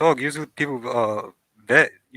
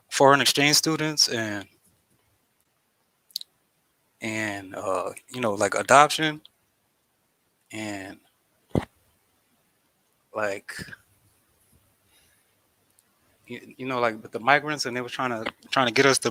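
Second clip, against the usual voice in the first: slightly anxious, nervous, struggling for words; 4 dB quieter than usual. Explaining something to a listener, a little nervous. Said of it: "you sound like you kind of nervous".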